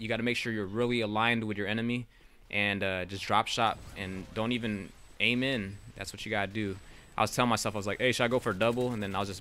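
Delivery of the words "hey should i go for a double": sarcastic remark, sarcastic tone. A streamer recalls what they said to themselves mid-game: retelling own sarcastic remark. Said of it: "I was just being, you know, sarcastic".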